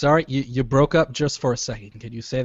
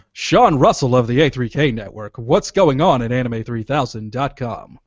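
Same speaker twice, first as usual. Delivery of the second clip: loud put-on radio announcer voice; 5 dB louder than usual. Introducing a guest on a call, in a put-on radio voice. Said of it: "Radio voice, radio voice".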